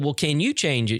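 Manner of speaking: plain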